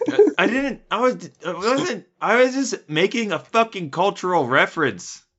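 high yelling, tripping over the words. Answering a co-host who questions a remark, yelling. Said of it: "I don't know why I'm yelling so much".

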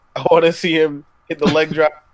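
ordinary talk

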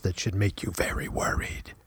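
soft, low, ominous mock whisper.

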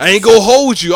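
put-on up north voice. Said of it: "Every time I go to y'all spot".

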